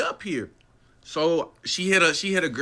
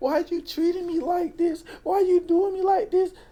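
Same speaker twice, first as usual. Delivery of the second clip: put-on crying, tearful voice, higher; 13 semitones higher than usual. Retelling what she said while crying: imitating someone crying. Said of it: "So she started crying again".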